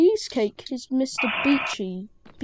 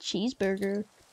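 cheeseburger with a put-on American accent; 3 semitones lower, 7 dB quieter than usual. Saying a word after another speaker asks for it: american accent. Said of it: "cheeseburger in an American accent".

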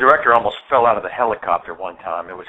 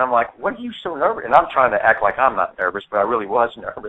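ordinary delivery

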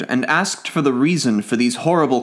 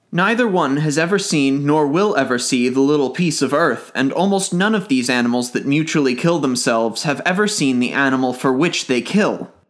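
usual speaking voice

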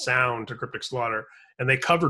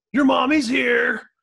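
put-on mocking jock voice, higher and louder; 12 semitones higher, 7 dB louder than usual. Retelling an older brother calling out in front of everybody: imitating a mocking jock. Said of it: "an eighties movie jock with".

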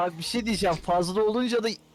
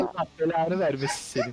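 usual speaking voice

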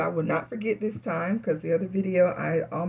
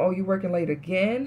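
acted-out sarcastic, jabbing tone. Describing asking a partner who may have cheated, retelling a sarcastic question. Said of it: "it's sarcastically".

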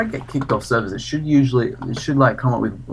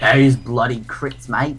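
put-on heavy overdone Australian accent. Player asked to imitate how the Sniper sounds, doing a Sniper impression with an Australian accent. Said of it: "can you imitate the sniper how he sounds?".

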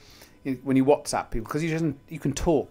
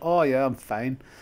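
put-on Scottish accent. Retelling greeting a woman and quoting her reply in a Scottish accent. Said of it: "That's Scottish".

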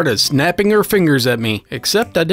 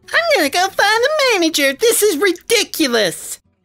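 angry put-on cartoon voice, higher. Repeating the angry woman's line about the manager: angry SpongeBob voice. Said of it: "Kinda sound like an angry SpongeBob".

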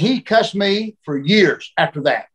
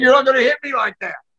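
mock angry, pitched-up voice; 7 semitones higher than usual. Retelling Flair coming back to the dressing room: imitating angry Flair. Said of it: "Flair came back to the dressing room mad".

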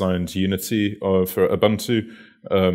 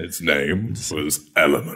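bad put-on American movie-trailer voice, lower; 3 semitones lower than usual. Presenting a chat client's name, in a bad American cinema voice. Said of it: "in a really bad American cinema act".

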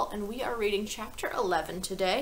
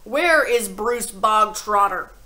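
very loud, slow, booming, drawn-out bark; 10 dB louder than usual. Reading a story aloud, a character calls a boy before the whole school, barking. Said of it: "the Trunchbull barked suddenly".

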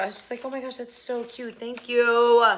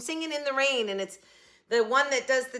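ordinary delivery

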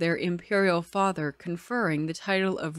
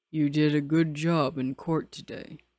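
speaking low, deep voice; 3 semitones lower than usual. After a glance from his brother, a man addresses another man: deep voice. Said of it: "said in a deep voice".

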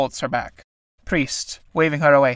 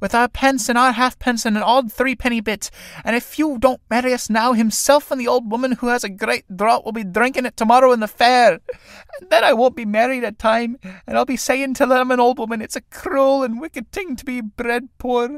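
high, weepy, tearful crying, on the edge of tears; 7 semitones higher than usual. Reading a play aloud, voicing Sarah Casey speaking to the priest: Sarah Casey crying. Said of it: "Synge, a story of two young tinkers trying to con a travelling holy man into marrying them, all while their mother is constantly trying to satiate her indomitable thirst for drink, thereby inadvertently causing more prob".

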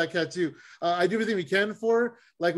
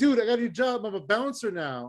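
put-on excited voice, higher; 3 semitones higher than usual. Retelling a friend's call about his new job: imitating an excited friend. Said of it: "he's all excited".

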